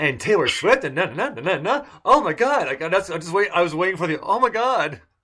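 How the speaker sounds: put-on Valley girl voice. Teasing Britt about sounding like a Valley girl, imitating a Valley girl. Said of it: "you sound exactly like a South Carolina Valley girl".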